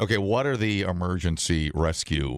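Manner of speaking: ordinary talk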